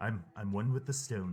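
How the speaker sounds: quiet whispered muttering under breath. Voicing a character climbing a rock wall: whispering under his breath. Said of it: "he's just kind of whispering under his breath".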